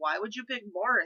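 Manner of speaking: ordinary talk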